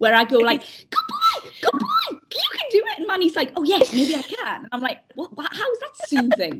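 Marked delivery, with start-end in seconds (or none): 0.9-3.0 very high, slow, drawn-out, silly, stupid put-on voice. Retelling the voice used to encourage Manny: stupid put-on encouraging voice. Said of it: "I had to do this really stupid voice".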